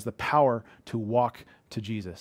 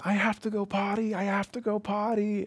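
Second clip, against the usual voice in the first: put-on acted-out, very high little-kid screeching; 10 semitones higher than usual. A parent tells how their son woke in the dark, imitating a child screeching. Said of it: "yelling at the top of his lungs, like screeching".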